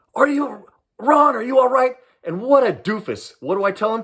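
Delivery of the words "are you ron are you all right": high call yelled from a distance. Recounting how he came out front and called down to the speaker: retelling a yell down. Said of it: "he yells down to me".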